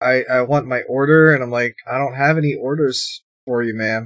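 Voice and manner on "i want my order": plain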